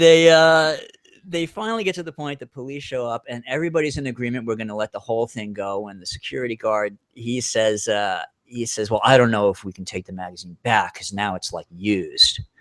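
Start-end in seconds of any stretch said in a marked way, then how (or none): 8.9-12.4 put-on snooty, stuck-up, superior tone. Retelling a dispute, the speaker quotes the security guard, imitating a snotty tone. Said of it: "he said it with this like snotty tone".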